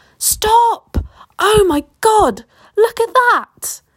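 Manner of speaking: acted-out very high, stretched-out, drawn-out scream. Retelling how he screamed, pointing at something on the ground, retelling a scream. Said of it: "went several shades paler and screamed".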